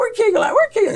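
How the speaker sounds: put-on very high-pitched, drawling southern accent. Recalling his catcher during a scuffle, the speaker is imitating catcher's southern drawl. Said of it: "I remember hearing his southern drawl".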